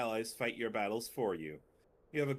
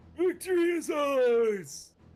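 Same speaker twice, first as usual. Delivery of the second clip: put-on old man voice, very high, very loud, shrill; 10 dB louder than usual. Voicing an old character in a game, the speaker uses an old man character voice. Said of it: "why I'm doing this voice".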